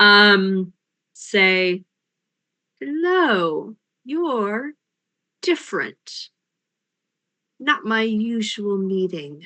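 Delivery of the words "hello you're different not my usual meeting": quiet male voice, drawn-out hello. Voicing an unseen figure speaking from the dark tunnels: quiet male-sounding voice. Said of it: "quiet, uh, male-sounding voice".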